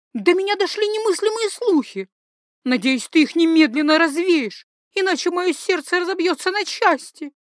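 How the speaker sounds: bitter exclaiming. A guest rushes across the hall to greet the narrator's husband: bitter exclamation. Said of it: "с горечью воскликнула она".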